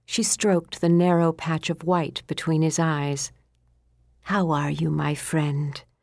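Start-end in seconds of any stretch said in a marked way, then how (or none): 4.2-5.8 soothing, calming voice, slower. Stroking her favorite horse in his stall, she greets him in a soothing voice. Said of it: "she asked him in a soothing voice".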